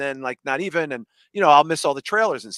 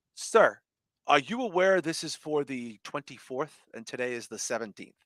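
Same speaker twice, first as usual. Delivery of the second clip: exceedingly polite, courteous tone; 8 dB quieter than usual. Retelling what a man scanning his phone said, imitating a very polite tone. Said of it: "says in the most polite way possible".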